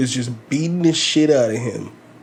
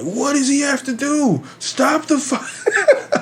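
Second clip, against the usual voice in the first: mock, very high, indignant, outraged screaming; 14 semitones higher than usual. Retelling watching a one-sided fight with the referee not stopping it: retelling a scream. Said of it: "and I'm screaming like".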